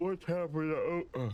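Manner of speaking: words broken by a high yawn. Reading story dialogue aloud with a partner: yawning. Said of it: "sorry about the yawning".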